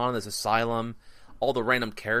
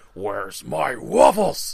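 loud, rough, rasping, gravelly put-on growl; 7 dB louder than usual. As a guy kicks the door open, the speaker speaks up: loud gravelly put-on voice. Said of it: "loud, gravelly voice".

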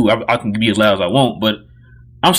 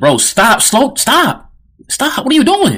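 mock very high, drawn-out, swooping, rising yell; 12 semitones higher than usual. Retelling what he yelled when the player dribbled up: imitating his own yelling. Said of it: "I was yelling".

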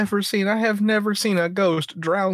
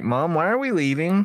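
put-on young child's voice; 4 semitones lower than usual. Imagining the kid asking why they are leaving: imagined kid's voice. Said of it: "the kid being like".

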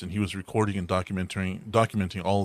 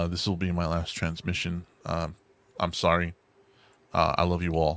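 put-on calm, accepting, resigned tone. Retelling a man's last transmission before an ambush, imitating a resigned farewell. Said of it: "the dude is just resigned".

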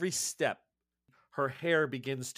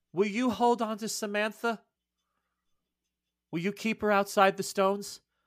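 high, loud, called-out yell; 8 semitones higher, 6 dB louder than usual. Retelling a scene from a story, a woman calls out; retelling a yell. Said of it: "she yells out".

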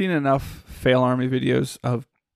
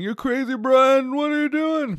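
put-on very high screeching scream; 13 semitones higher than usual. Retelling a scene where Roman yells at Brian, imitating Roman screaming. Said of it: "Roman's, like, screaming".

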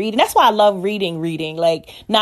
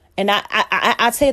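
stuttering, stammering, tripping over words. Speaking about pastors and ministers, the speaker stutters while starting a sentence. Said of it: "here I go again, stuttering".

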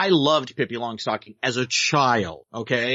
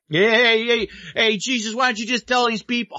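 put-on mimicked New York accent, much higher; 9 semitones higher than usual. Describing a biblical film whose cast talk that way, imitating a New York accent. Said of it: "talking with the New York accent".

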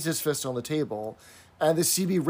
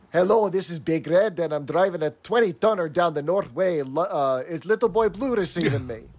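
clumsy, bad, put-on Scottish accent; 2 semitones higher than usual. Retelling a trucker's radio call after being urged: bad Scottish accent. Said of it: "I can't do the Scottish accent".

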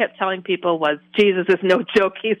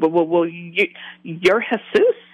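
put-on, imitated stuttering, stammering speech. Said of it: "and I'm stuttering".

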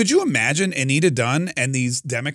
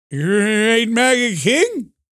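mock elderly politician voice; 9 semitones higher, 4 dB louder than usual. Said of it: "That's my Joe Biden impression".

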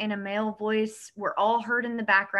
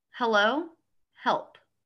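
put-on pleading whisper. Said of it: "In a whispered voice".

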